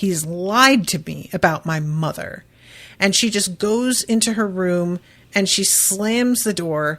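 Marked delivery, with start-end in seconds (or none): none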